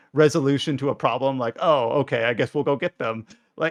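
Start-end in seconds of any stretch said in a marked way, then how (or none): none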